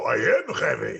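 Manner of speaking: put-on loud Russian accent. Telling how people said he sounded like a game character, answering them, Heavy voice. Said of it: "a Russian accent".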